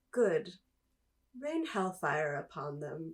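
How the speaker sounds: calm, cool, collected, easy, utterly relaxed tone. Retelling the moment Thrawn gets the report: calm, cool Thrawn voice. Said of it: "just in his, like, calm, cool, collect Thrawn voice".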